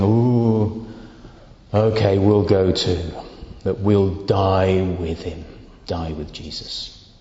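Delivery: reluctant, gloomy, resigned, drawn-out ooh. Imagining how he would have said it, in a put-on glum, resigned voice. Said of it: "in a glum, resigned voice saying".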